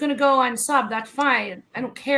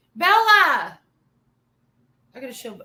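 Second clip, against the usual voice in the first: loud yelling, calling out; 4 dB louder than usual. Calling for Bella to come see something, yelling. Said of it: "I'm sorry, I'm yelling".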